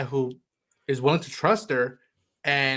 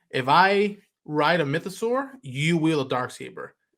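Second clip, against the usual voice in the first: ordinary delivery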